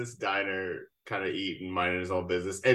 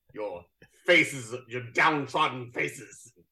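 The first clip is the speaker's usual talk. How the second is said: put-on deep voice with old theatrical cadence. Retelling a man addressing diners in a restaurant, in a deep Shakespearean voice. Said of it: "deep voice, Shakespearean cadence to everything he says".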